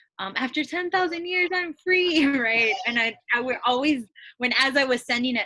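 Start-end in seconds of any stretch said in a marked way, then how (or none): 0.4-2.3 high, gloating villainess voice. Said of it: "I would always read it in her voice".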